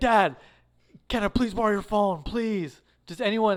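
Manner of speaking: frantic, desperate, like losing control. Retelling a movie scene where a character loses his phone, mock-desperate pleading. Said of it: "he's like basically losing his mind".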